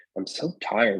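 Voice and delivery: ordinary delivery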